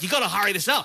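mock yelling. Speaker retelling how the ep pushed him to hurry the line, retelling a yell. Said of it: "So she's yelling at me".

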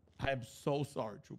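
fake, insincere-sounding apologetic tone. Told the last apology didn't sound sincere, apologizing again: fake, insincere apology. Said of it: "it sounds fake as shit".

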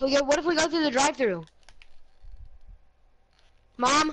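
loud, high-pitched, quick calling out.

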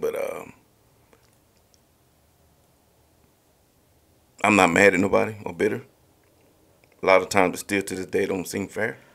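restrained, held-back emotion. Speaker opening up in conversation, holding back emotion. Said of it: "I'm trying not to get a little emotional here".

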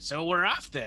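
voice of a little impish creature. Narrating a game scene, voicing an imp speaking to the players, imp voice. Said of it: "you hear the voice of the imp or the yattering say".

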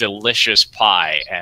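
plain reading voice

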